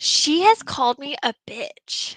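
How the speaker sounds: mock angry whisper, breathy and pissed-off. Retelling Nicole's complaint about being insulted: imitating Nicole angry. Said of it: "she is, like, pissed".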